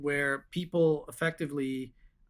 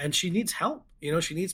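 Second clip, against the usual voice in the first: ordinary talk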